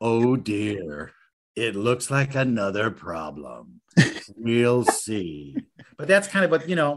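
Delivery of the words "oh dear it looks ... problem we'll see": put-on deep, very slow, dramatic narrator voice. Narrating a billionaire's troubles in a Keith Morrison voice. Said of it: "I could do that with a Keith Morrison voice".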